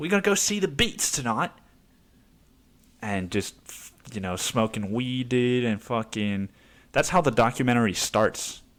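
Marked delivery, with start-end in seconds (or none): 0.0-1.5 put-on, laid-on, pitched-up British lad accent. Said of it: "a British dude".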